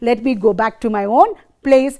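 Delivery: normal talking voice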